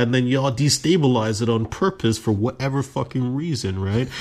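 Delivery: ordinary delivery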